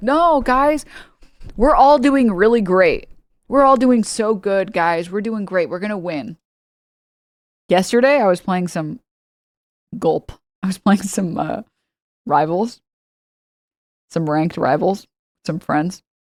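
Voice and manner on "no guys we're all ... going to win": hollow, forced, fake cheerful cheerleading tone. Former track coach mocks toxic positivity with kids, mock forced cheerful pep talk. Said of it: "there's no joy in like".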